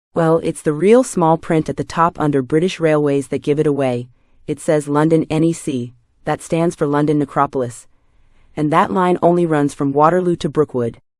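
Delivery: ordinary delivery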